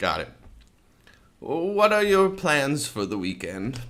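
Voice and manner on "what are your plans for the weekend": put-on pitched-up old lady voice. Taking on a role as asked, the speaker poses a question in an old lady voice. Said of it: "Old lady voice".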